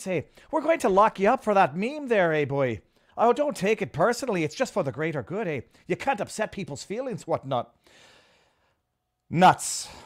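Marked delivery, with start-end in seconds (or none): 0.0-7.7 Irish accent laid on thick for effect. Showing how something sounds when said in an Irish accent, Irish accent. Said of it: "when you say something in an Irish accent".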